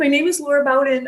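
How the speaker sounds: high, sobbing, pleading voice. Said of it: "I'm sobbing. I'm shaking".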